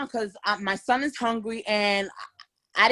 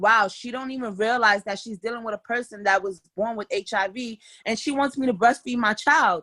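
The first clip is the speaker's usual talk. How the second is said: ordinary talk, nothing marked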